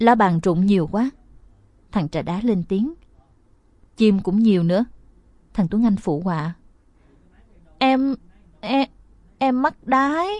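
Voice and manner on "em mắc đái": high, quavering, wobbling, trembling voice. Reading a story, the boy in the mask speaks up in a trembling voice. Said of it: "kêu lên giọng run rẩy".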